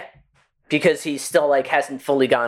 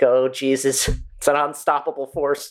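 ordinary talk, nothing marked

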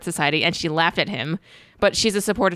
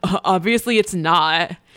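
very drawn-out, slow, dismissive scoff; 3 dB louder than usual. Retelling how a man in footage reacts, imitating Mark Sargent scoffing. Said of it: "is clearly laughing about that".

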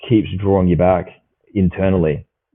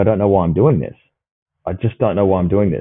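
put-on hard sobbing, tearful pleading voice. Retelling what a kayaker said while paddling out: imitating someone crying hard. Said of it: "he's crying, like, his eyes out, going".

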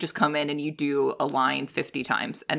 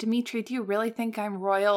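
earnest, high-pitched voice; 7 semitones higher than usual. Recounting a favorite movie line, the speaker imitates Meg Ryan's earnest delivery. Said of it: "she says it so earnestly".

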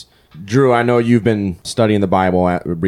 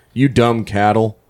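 slow, higher mocking sneer. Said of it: "a mocking gesture too".

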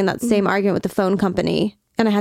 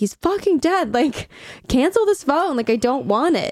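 high-pitched screaming and yelling; 6 semitones higher than usual. Retelling screaming at the phone company on the phone, re-enacting screaming on the phone. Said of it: "I remember screaming on the phone".

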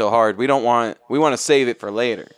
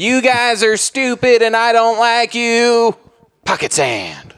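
very high-pitched, slow cartoon voice; 10 semitones higher than usual. Joking how negative feedback will be read aloud: Dale Gribble voice. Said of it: "any feedback that's negative will be read in a Dale Gribble voice".

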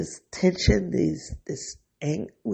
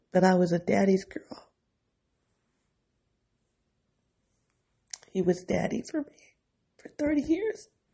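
tearful voice, crying while talking; 2 semitones higher than usual. Remembering a father as a daddy's girl, crying while talking. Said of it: "I'm over here really crying".

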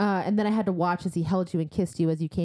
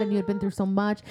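ordinary talk

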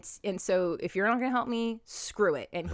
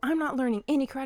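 put-on fed-up, angry protesting tone, pitched up; 6 semitones higher than usual. Retelling a movie scene where the character is fed up: imitating someone pissed off. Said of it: "he's so pissed and he's like".

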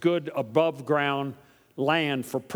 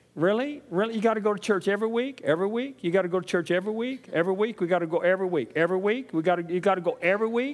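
incredulous, pitched-up nagging, harping on and on; 5 semitones higher than usual. Speaker acting out a churchgoer's partner, imitating a partner. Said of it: "they've got a partner who starts talking like this".

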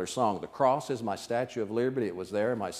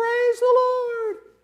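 put-on very high, very loud, squeaky teen voice; 10 dB louder than usual. Retelling a teenage girl suddenly standing straight up, in her little squeaky 16-year-old voice. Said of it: "in her little squeaky 16-year-old voice".

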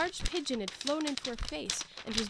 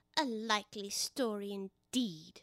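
very slow, drawn-out, scornful, deeply contemptuous tone; 5 dB quieter than usual. The pigeon answers Alice's claim to be a little girl, with deepest contempt. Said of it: "said the pigeon in a tone of the deepest contempt".

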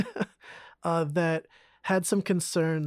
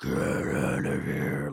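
very low, rough, slow guttural growl. Retelling what an unexplained voice said to the girls: guttural voice, getting louder. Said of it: "like that guttural noise".

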